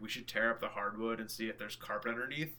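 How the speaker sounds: usual speaking voice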